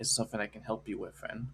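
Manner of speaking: very hushed, soft, low-key murmur. Retelling how a man stepped beside a friend and spoke: hushed tone. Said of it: "in like a very hushed tone as like".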